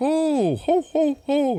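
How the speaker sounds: very high, slow, drawn-out jolly Santa laugh. Retelling a scene where a rival santa stays in character: imitating a santa in character. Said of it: "staying in character while he's talking".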